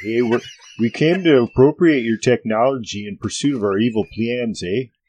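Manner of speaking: put-on Canadian accent, put on. Suggesting how the elves should speak, in a canadian accent. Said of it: "They should speak with Canadian accents".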